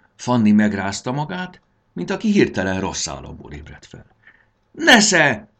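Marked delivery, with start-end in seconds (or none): 4.7-5.4 very high, very loud shout. Snapping out of a daze and hurling the light ball at the attacker: shouting. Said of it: "kiáltotta".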